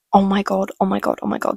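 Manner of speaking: ordinary talk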